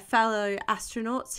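ordinary delivery

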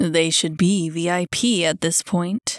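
growling voice. Having let go of the other man's shoulder and backed off, he growls. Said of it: "he growled".

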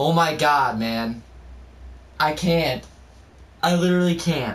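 frightened, overwhelmed, terrified, stressed-out outburst. Speaker mid-game, stressed on another level: so scared. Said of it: "I'm so scared".

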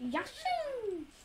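high-pitched squeaky character voice. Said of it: "Try to do your Yoshi impression".

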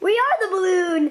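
high, squeaky helium balloon-gas voice. Playing balloons floating up high, answer in a high-pitched helium voice. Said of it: "Why is your voice so high?".

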